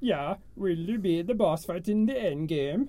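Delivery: put-on Swedish accent in a puppet-chef style. Finishing a question to the group, in a Swedish Chef voice. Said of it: "That's the chef from Muppets".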